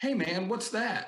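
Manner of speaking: very high man's voice, slow and drawn out. Retelling how a man in a book on metal spotted you in the crowd, imitating a higher-pitched voice. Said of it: "he's got kind of a higher pitched voice".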